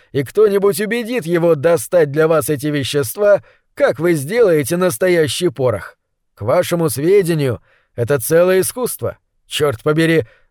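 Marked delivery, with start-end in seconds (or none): none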